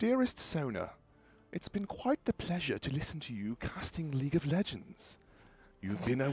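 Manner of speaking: very soft, hushed, put-on posh English accent. Recording a message on the phone, in a posher accent. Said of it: "make my accent posher".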